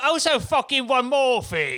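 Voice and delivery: fake South African accent. Told by co-hosts to say the line in a South African voice; bad South African accent. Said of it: "that's not South African at all".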